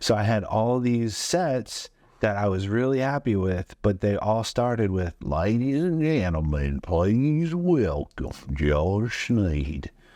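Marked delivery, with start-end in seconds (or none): 5.2-9.9 put-on thickest Southern accent, slowed way down. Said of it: "he had the thickest Southern accent you have ever heard".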